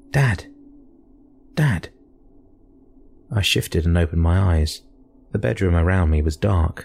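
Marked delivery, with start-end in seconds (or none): 0.1-1.9 weary yet urgent call, pitched up. A son shakes his sleeping father's arm to wake him, tired but urgent. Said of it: "His voice sounded tired, but urgent".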